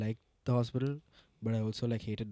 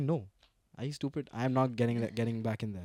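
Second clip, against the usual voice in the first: normal talking voice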